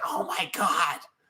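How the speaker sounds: raspy-voiced exclamation. Retelling what a woman exclaimed, imitating her raspy voice. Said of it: "She she had that raspy voice".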